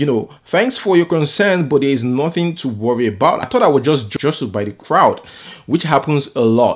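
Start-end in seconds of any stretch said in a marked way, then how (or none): none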